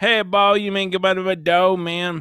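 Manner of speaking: put-on loud Louisiana French accent. Showing a listener how a cooking guy on YouTube talks, in Stale Cracker's French Louisiana accent. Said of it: "like a French Louisiana accent".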